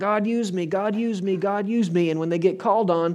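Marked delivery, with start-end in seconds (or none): 0.0-2.1 mock, fervent, repeated crying-out pleading. Imitating people who call on god: imitating people crying out. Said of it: "People are crying out".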